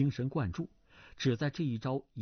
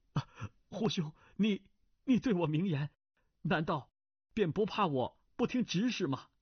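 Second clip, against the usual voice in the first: quavering, shaken, trembling, pitched-up voice; 5 semitones higher than usual. Ji Xiaofeng, surprised and anxious, replies to Hu Fei in a trembling voice. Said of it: "颤声道".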